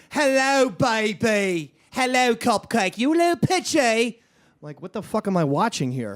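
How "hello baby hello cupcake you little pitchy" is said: slow, drawn-out put-on English accent, dropped in. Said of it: "go sporadically into an English accent".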